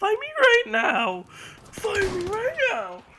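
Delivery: very high, very loud scream with voice cracking.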